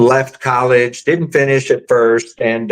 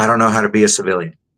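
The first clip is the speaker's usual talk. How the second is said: mock earnest, completely solemn, dead serious, grave; 3 semitones lower than usual. Retelling what a buddy said one day, imitating a serious tone. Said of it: "he looks at me very seriously".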